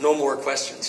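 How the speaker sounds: normal talking voice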